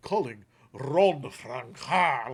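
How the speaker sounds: put-on French accent on a name. Retelling what the phone's assistant said back to the speaker, Google assistant French accent. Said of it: "like in a French accent".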